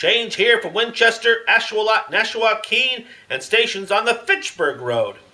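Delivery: wide-mouthed, loud, high announcing call. Narrator reading a story, the whale rushes up the beach: calling out, mouth wide open. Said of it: "there was a whale, / Then the whale opened his mouth back and back and back till it nearly touched his tail, and he swallowed the shipwrecked mariner, / and he ate fishes. / I've got the hiccups."".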